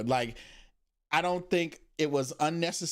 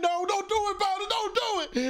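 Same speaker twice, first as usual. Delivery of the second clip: high, pleading, begging cry. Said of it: "I'm like".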